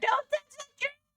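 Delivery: very high-pitched screaming. Retelling what the wife screams over the shoulder: imitating wife screaming. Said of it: "My wife is screaming at you over my shoulder".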